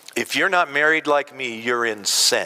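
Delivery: ordinary talk, nothing marked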